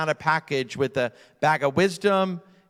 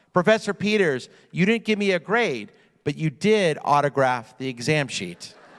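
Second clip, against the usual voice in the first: usual speaking voice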